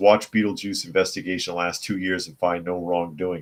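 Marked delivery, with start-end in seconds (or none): none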